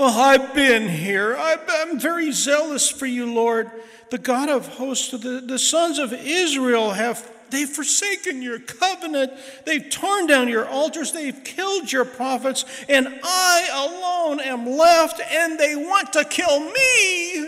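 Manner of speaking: put-on, very high, loud, whiniest possible whine. A speaker retells Elijah answering God in a cave, mock-whiny Elijah voice. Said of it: "You have to hear this in the whiniest voice you possibly can".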